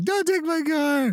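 mock sobbing, high-pitched crying voice, pitched way up. Imagining the owner whose car is repossessed: mock crying. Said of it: "the other person's just crying".

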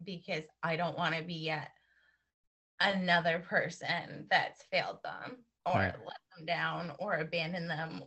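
choked-up, emotional voice breaking mid-sentence. Speaking about not letting down the people who trust them, choking up. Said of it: "I'm getting choked".

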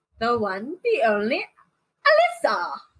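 put-on British accent, sing-song swoops, showman style. Podcast co-host introducing herself at the opening of an episode, in a fake British accent. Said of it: "she's doing a British thing".

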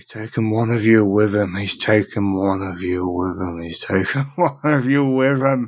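muttering, mumbling. Voicing Carl as the players approach: muttering. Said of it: "Carl is muttering".

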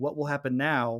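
put-on nervous voice. Retelling an anxious character rushing to battle stations, imitating a nervous voice. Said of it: "He's very nervous".

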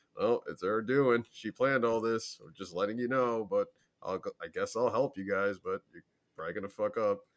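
put-on nonchalant sarcastic voice. Retelling what Imara said about Savathun: imitating Imara, nonchalant and sarcastic. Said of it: "he's so nonchalant about it and kind of, like, uh, sarcastic".

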